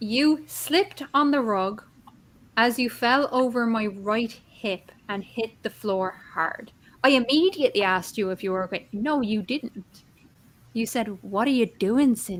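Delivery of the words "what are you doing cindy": acted-out, very condescending, patronizing tone. Speaker retells what the listener said to her after she fell, imitating a condescending voice. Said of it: "in a very condescending voice".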